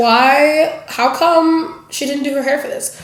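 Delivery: normal talking voice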